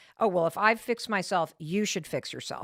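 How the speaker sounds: normal talking voice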